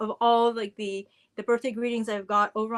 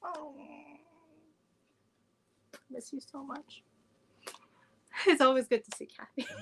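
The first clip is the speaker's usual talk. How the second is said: on the verge of tears, very quiet and slow; 5 semitones higher, 5 dB quieter than usual. Speaking to Kyle about seeing Kathy, tearing up. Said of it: "See, easy cry".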